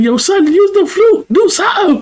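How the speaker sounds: shrill, very high-pitched yelling, screaming. Retelling how they screamed at Jason, imitating people screaming. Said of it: "they screaming at Jason like".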